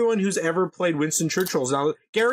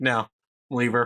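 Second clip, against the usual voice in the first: mock, put-on voice full of disgust; 8 semitones lower than usual. Retelling a friend's answer about waking someone: imitating a disgusted reply. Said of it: "He just looks at her disgusted".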